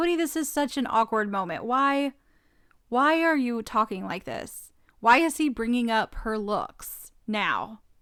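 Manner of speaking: normal talking voice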